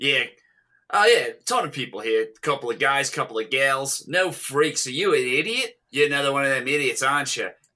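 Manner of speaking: put-on Australian-accented character voice. Speaker acts out a movie character's lines; australian accent impression. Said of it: "Are killing with the Australian accent".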